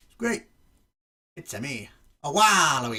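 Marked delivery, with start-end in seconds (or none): 1.4-3.0 loud, very slow, drawn-out, terrible video-game voice. Showing off a new amiibo, doing a terrible Waluigi impression. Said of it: "That was probably a terrible impression".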